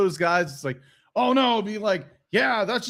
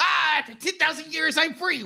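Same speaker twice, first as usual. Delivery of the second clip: put-on witch voice, higher pitched; 7 semitones higher than usual. Acting out the witch arriving in her trash can: Rita Repulsa voice. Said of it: "her little witch name is, coming down in her little trash can, be like".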